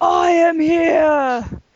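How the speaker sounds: booming villainous voice, loud and very high-pitched. Describing a character everyone is still scared of, imitating her booming evil voice. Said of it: "talking in this booming evil voice".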